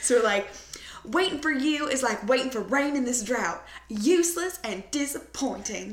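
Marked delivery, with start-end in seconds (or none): 1.0-5.9 put-on laid-on southern Alabama accent, pitched up. Speaker shows how they say a movie quote, Reese Witherspoon Sweet Home Alabama accent. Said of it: "we say it in like the Reese Witherspoon Sweet Home Alabama accent".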